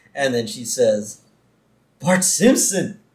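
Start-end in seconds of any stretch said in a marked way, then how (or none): 2.0-2.9 mock gasp, higher. Retelling a scene, voicing the Sunday school teacher calling Bart, acting out a gasp. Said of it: "with a gasp".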